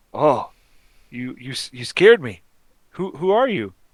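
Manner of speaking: put-on loud, startled, jumpy young woman stammering. Voicing a young woman startled by a kobold: startled young woman. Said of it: "she sees the kobold and screams".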